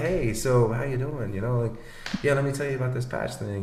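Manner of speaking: unenthusiastic, subdued voice. Teaching energy on phone calls, showing the wrong way, in a low-energy phone voice. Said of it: "let's pick up the energy".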